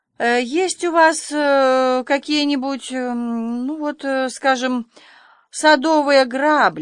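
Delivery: stumbling, very slow, drawn-out stammer on ну. Matthew asks Miss Harris at the shop counter, stammering. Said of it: "запинаясь, вымолвил Мэтью".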